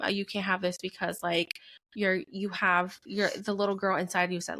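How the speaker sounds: normal talking voice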